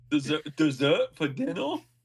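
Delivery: put-on French accent. Chatting with friends about a chocolate fondue pot, speaker jokes in a French accent. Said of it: "Was that the French accent?".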